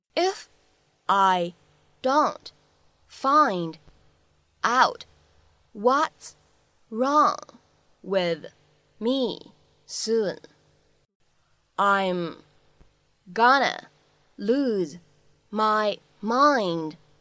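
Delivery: slow, halting, word-by-word reading.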